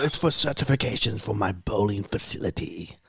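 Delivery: put-on British accent. Retelling a phone call asking for someone by name, british accent. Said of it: "for some reason I did a British accent".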